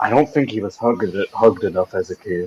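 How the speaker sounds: very low, hushed, half-whispered aside. In a role-play game, a character turns to Yik and speaks: half-whispering. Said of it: "just whisper".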